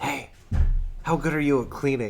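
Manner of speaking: soft whisper, close in, as an aside. Pulling a crew member close to ask a question: whisper. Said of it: "I'm gonna whisper in his ear".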